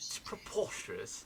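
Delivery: British accent in a whisper. Showing the others how the word should be said, in a British accent. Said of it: "You gotta say it with a British accent".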